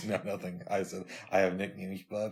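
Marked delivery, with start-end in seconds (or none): 1.3-2.3 teasing voice. Repeating the line as an impression: imitating the other host. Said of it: "That was my impression of you".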